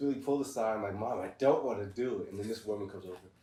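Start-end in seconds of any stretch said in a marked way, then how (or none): 1.0-2.3 put-on tearful crying voice, louder. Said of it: "So I started crying, like".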